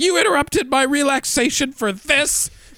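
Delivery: acted very high diva-style furious yell. Retelling how a woman flipped out at others, mock-yelling at them. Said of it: "flips out and starts yelling at them".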